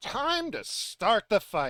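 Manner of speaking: shouting. Voicing a character during a tabletop game, yelling. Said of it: "Ren yells".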